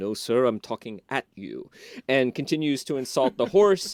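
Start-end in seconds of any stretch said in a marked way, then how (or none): 0.0-1.7 haughty, condescending, lordly gentleman's disdainful tone. Retelling a film scene where a gentleman answers D'Artagnan: haughty Christopher Lee voice. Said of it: "in his sort of haughty Christopher Lee voice".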